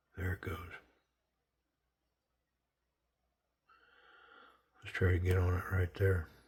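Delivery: speaking in a whisper. Trying to turn a part by hand, whispering. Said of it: "I'm whispering".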